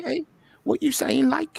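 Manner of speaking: very high-pitched, put-on Liverpool Scouse accent. Joking around about Liverpool, the American speaker puts on a Scouse accent. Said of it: "Scouse accent".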